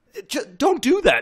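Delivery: mock shrill, very high, loud freak-out. Retelling a post-credit scene, the overlord losing it: imitating a freak out. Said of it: "he has this whole freak out".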